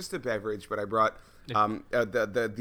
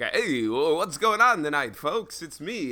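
1950s radio DJ voice, slower, higher, louder; 6 semitones higher, 5 dB louder than usual. Asking a guest for an impression, the speaker demos a Wolfman Jack impression. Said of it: "like Wolfman Jack impersonation, like 50s radio".

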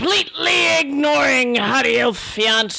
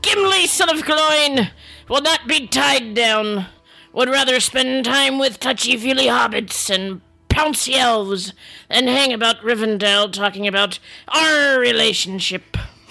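put-on Scottish pirate accent, growled. Gimli reading his quest diary aloud, in Gimli Scottish pirate voice. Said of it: "I, [name] son of [name], / beard now silky and conditioned. / I, [name] son of [name], / I just wanted her to sound like a Scottish pirate. / Grr! Arr".

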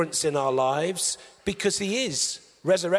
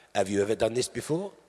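awful, low-pitched, put-on French accent; 8 semitones lower than usual. Retelling what a French instructor asked her, appalling French accent. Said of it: "appalling French accent coming up".

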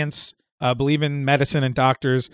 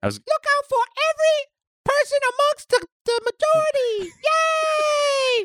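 put-on squeaky childlike puppet voice. Joking that Elmo leads the workers, doing an Elmo impression. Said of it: "that's a good Elmo".

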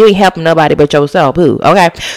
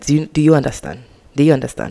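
light, soft, put-on Nigerian accent; 3 semitones lower, 7 dB quieter than usual. Giving a shout-out to Nigerian listeners: put-on Nigerian accent. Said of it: "I gave a little accent".

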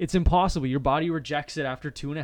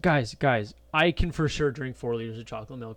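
mock showy, boastful, cocky know-it-all bragging; 2 semitones lower than usual. Retelling how a teammate showed off about drinking chocolate milk: imitating someone bragging. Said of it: "he was just bragging one day".

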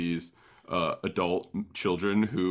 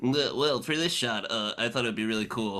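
put-on halting, stammering cartoon kid voice; 4 semitones higher than usual. Imitating a film director who sounds like a cartoon kid: Zack Snyder sounding like Milhouse. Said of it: "he sounds like Milhouse".

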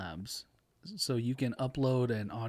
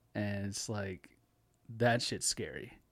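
plain

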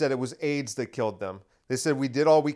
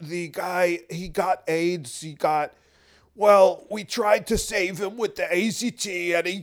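slow, drawn-out, throat-straining put-on voice; 4 semitones higher than usual. Trying the Fauci voice again: put-on voice for Fauci. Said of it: "it's really hard to do that voice".

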